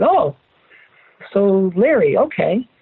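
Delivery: heavy, weighed-down sighing, very slow and drawn out. Retelling his reply on hearing about Larry, retelling a heavy sigh. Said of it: "I kind of sighed heavily and I said".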